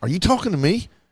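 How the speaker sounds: acted calm, controlled tone. Retelling answering a man who threw him out of the game, retelling a calm reply.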